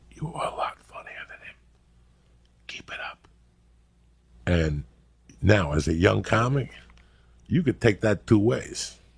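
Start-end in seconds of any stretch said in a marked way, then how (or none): 0.1-3.2 very quiet, hushed, confiding whisper. Retelling a fan's remark after the show: imitating a fan whispering. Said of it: "would come over and whisper in my ear".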